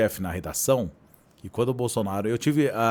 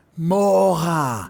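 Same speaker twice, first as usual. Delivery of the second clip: yelling, pitched higher; 6 semitones higher, 4 dB louder than usual. Retelling how the director yelled at the newsroom: imitating the director yelling. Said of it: "o diretor berrava".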